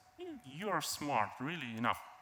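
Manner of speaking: ordinary delivery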